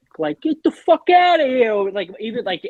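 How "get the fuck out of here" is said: heavy New York Italian accent, very high pitch. Showing a co-host how anything sounds funny this way: thick New York Italian accent. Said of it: "if you say anything with that thick".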